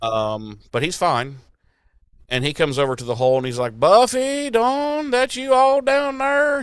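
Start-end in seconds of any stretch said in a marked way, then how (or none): 3.8-6.6 put-on Southern accent, high-pitched. Recapping a scene where Xander calls down into a hole, Xander's southern accent. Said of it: "He's he's got a southern accent now".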